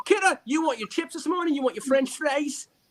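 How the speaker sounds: put-on English accent. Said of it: "We're English today".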